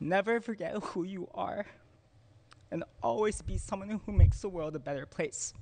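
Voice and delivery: speaking through tears. Giving a parting message to the community, crying while speaking. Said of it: "I'm crying, y'all".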